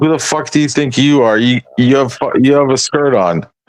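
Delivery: furious, cursing, angry in-your-face tone. Retelling getting in a man's face: retelling confronting someone angrily. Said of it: "I got in his face".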